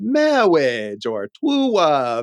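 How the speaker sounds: put-on clergyman voice, w for r in "true love". Quoting a film line people say at weddings: impression of the clergyman. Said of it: "that was an excellent impression".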